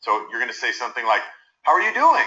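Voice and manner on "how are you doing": high, eager-to-please, supplicating voice. Showing a greeting meant not to ruffle feathers: supplicating, approval-seeking. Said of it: "Very supplicating, once again, very looking for approval".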